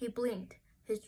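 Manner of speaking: ordinary delivery, nothing marked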